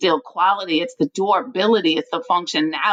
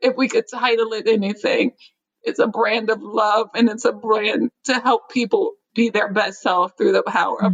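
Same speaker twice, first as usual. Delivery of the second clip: crying, tearful, emotional voice while still talking; 3 semitones higher than usual. Brand founder speaking with the hosts, crying, emotional. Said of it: "emotional, sorry guys".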